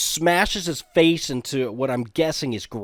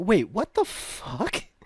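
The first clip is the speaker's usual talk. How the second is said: slow, high-pitched, stunned disbelief. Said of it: "I was just like".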